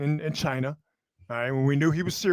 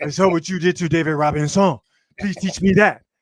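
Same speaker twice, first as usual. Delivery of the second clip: loud, exaggerated French accent; 8 dB louder than usual. Retelling what Wemby said, in an exaggerated French accent. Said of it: "presuming it sounded very very French".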